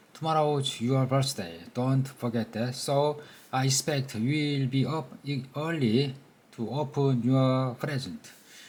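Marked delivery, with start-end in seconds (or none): none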